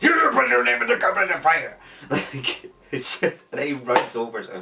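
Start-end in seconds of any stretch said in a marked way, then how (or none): 0.0-1.8 shouted, forceful put-on delivery. Doing the line Michael Gambon shouted at Harry, in a Michael Gambon shouting impression. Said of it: "read it as "shout at Harry," ... everybody imitates it. It's like".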